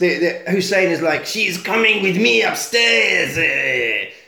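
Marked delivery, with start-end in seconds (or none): 1.3-4.1 slow, drawn-out put-on movie-villain voice. Retelling a film scene where a criminal grabs a lady: put-on baddie voice. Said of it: "That's gonna be my baddie voice".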